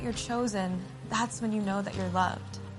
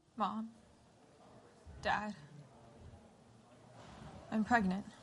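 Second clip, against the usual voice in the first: put-on voice of a young woman; 9 dB quieter than usual. Imagining how the line was told to the parents: acting as Mary. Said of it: "You think she said it like that?".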